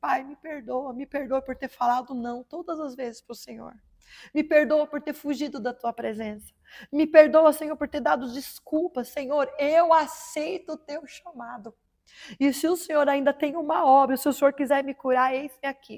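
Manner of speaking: fake weeping, tearful voice. Retelling own prayer on bent knee, said crying: retelling a tearful prayer. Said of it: "eu comecei a chorar".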